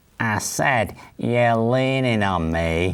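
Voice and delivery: slow, very nasal, hard-edged voice. Retelling a man behind him complaining, in a hard nasal voice. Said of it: "he had a very hard, very nasal voice".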